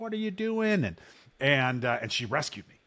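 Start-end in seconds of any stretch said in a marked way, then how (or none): 0.0-0.8 screaming at a very high pitch. Retelling how mom screamed at kids on the playground: imitating mom screaming. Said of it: "she was screaming at these kids".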